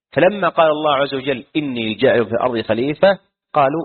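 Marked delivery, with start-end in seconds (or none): none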